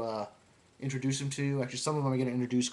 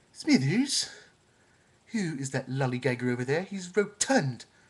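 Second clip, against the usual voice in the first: full put-on cartoon voice, swooping pitch. Doing Simpsons voices, asking Smithers about a man, Mr. Burns voice. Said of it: "We'll do mister Burns right now".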